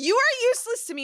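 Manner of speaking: hysterical squealing shriek, very high-pitched and shrill. Retelling screaming at him on the phone during a wasp scare; retelling a hysterical shriek. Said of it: "I called him legit hysterical".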